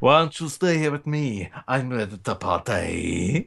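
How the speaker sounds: put-on drunk-sounding voice, party drawn out. Showing how a character might have sounded in Russian: drunk Niko Bellic voice. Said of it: "it sounds like a drunk Nico Bellic".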